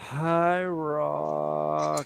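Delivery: whispered whine. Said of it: "this, like, whisper whine of a voice".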